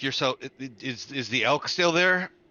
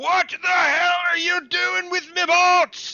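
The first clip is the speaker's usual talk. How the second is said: very loud, very high dwarf scream at top of voice; 6 dB louder than usual. Narrator voicing a dwarf running up the pier at the players: dwarf screaming at top of voice. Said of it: "he's screaming at the top of his voice".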